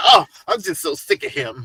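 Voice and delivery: imitated valley girl voice. Showing how she said it when she was bothered, imitating a valley girl. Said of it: "You know you got a little valley girl in you".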